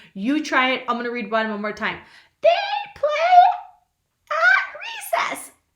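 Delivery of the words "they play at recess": very high, loud, tiny squeaky voice. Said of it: "you just squeak it and make your voice really small".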